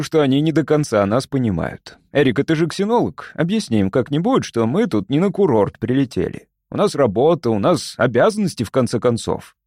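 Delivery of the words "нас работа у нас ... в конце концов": ordinary delivery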